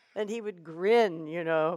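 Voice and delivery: plain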